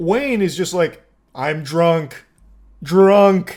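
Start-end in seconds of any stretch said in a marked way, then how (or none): 1.3-3.6 mock drunk caveman talk, louder. Retelling how the driver answered, imitating drunk caveman speech. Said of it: "Speaking like a caveman".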